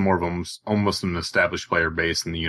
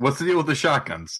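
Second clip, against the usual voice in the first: high-pitched, jokey sitcom comedian delivery; 8 semitones higher than usual. Retrying the question after being told it was read wrong: Seinfeld voice. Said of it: "ask it in, uh, Seinfeld voice".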